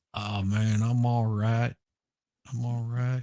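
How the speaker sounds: mock very slow speech. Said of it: "he talked really slow".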